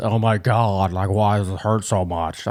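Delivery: slow, exaggerated, over-the-top deep voice. Describing a video of a guy claiming menstrual pains, imitating a guy's deep voice. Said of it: "he's got his deep ass voice, like this".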